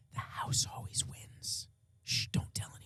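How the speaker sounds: playful, joking, very hushed whisper. Sharing a secret about the betting odds as a joke: joking whisper. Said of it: "we have to whisper this".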